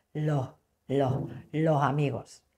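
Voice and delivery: Andalusian accent, s of los breathed out. Explaining the aspirated S of Andalusian speech with an example, Andalusian accent. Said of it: "En lugar de decir los amigos".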